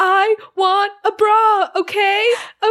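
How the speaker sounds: very high-pitched, shrill, blurted shout. Retelling a scene where a girl shouts out: imitating a shout. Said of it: "she shouts out".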